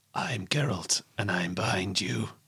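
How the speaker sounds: grunting drawl, very slowly spoken, dragged out. Showing how the game character sounds: Geralt voice. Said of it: "he goes like this".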